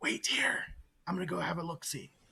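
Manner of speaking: whispered speech. Telling companions to wait while sneaking up for a look, whispering. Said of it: "And I'll whisper".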